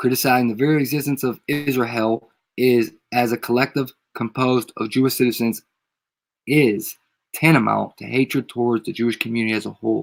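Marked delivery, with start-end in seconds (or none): none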